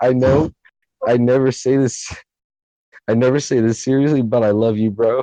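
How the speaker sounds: choked-up, tearful, halting delivery with voice cracking and breaking. Talking to his best friend since kindergarten, crying while speaking. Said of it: "I'm crying".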